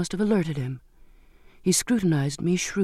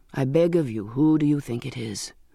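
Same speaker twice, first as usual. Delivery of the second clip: plain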